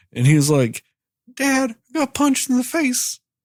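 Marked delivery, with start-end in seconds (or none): 1.4-3.2 put-on very high, weepy, crying child voice, acted out. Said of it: "came home crying".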